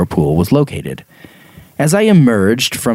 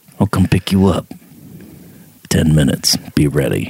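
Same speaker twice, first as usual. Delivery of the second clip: gangster tough-guy voice; 4 semitones lower than usual. Imitating someone who offers a ride: Liam Neeson gangster impression. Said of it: "Mixed with a little gangster".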